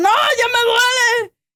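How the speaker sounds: mock ugly pained cry, very high and very slow. Retelling an experiment where a person gets shocks: imitating someone screaming in pain. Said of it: "empieza a gritar más feo".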